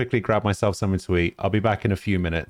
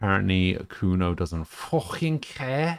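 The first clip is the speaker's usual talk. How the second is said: put-on botched, failed Scouse accent. While playing a game, voicing a line aloud, bad Scouse accent. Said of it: "I can't do a Scouse accent".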